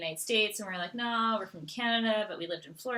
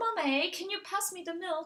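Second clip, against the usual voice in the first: put-on, very high-pitched British child voice; 10 semitones higher than usual. A mother retells how her girls started talking to her, imitating their british accent. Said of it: "who sounded very British. So the girls started being like".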